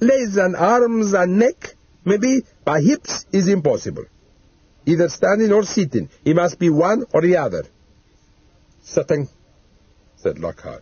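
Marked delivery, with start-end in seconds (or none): 0.0-7.6 put-on protesting Italian accent, pitched up. Narrator voicing the taxidermist asked to stuff a dead man, italian accent. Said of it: "taxidermist and specialist in permanent preservation of 5 Brunston Road, ... lapsing into his native tongue. "Mamma mia, you can't be serious."".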